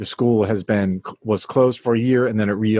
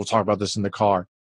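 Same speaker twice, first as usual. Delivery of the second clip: mock hard, fierce, stern delivery; 4 dB quieter than usual. Imitating a man who carries a fierceness about him: mock-fierce tone. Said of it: "he has this fierceness".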